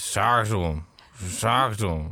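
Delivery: put-on drunk cat voice. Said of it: "this drunk cat that's just talking".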